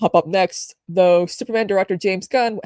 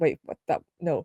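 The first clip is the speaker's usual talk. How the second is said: ordinary talk, nothing marked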